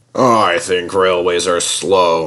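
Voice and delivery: low, bored, uninterested, unimpressed tone. Narrator reads a character's reply to another in a story, bored voice. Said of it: "said Harold in a bored voice".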